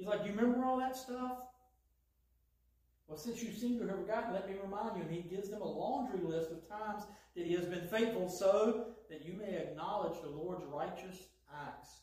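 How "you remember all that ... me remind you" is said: lightly sarcastic, wry tone. Retelling how God answers the people, imitating slightly sarcastic God. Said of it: "this is slightly sarcastic God".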